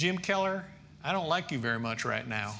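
put-on southern American accent. Retelling what Beth said on the phone, imitating Beth's southern accent. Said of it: "she's got this great southern accent".

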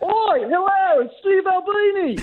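thick, exaggerated Australian accent, very high. Introduced as the real Mr. Albini and greeting, with a thick Australian accent. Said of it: "I didn't know you had such a thick accent".

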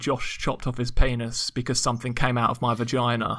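ordinary talk

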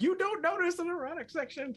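squeaky, very high game master narration voice. Player mocks how the game's DM narrates, imitating Big Noodle's DM voice. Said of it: "Big Noodle be like".

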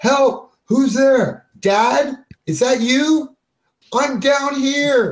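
very high, loud, drawn-out scream. Game narrator voicing a woman calling up from below, Joan Marlowe screaming for help. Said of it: "and she's screaming".

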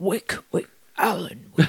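creepy dark creature voice. Called on in turn for the requested impression, a player does an Alan Wake darkness impression. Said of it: "I want your best Alan Wake darkness impression".

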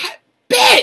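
very high, loud shout.

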